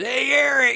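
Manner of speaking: put-on very high, raspy voice with Michigan accent vowels. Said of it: "he's got this real like raspy, like Michigan, accent".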